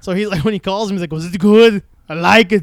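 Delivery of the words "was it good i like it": bad loud, drawn-out, bored Austrian accent. Copy Taron Killam's bit about calling Arnold about the movie, in a terrible bored Arnold impression. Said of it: "I'm doing a terrible version".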